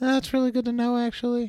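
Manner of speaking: soft, gentle, very high-pitched voice. Retrying the line after being told to try a little softer: a little softer. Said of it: "Try a little softer".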